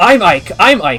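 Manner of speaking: insistent tone. In a tabletop game, the person under a player's character answers the interrogator: insisting. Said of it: "The person under you insists".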